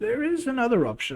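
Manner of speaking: put-on high old grandma voice. Astrida speaks up after pausing to think; Astrida's old grandma voice. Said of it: "Sorry about the grandma voice".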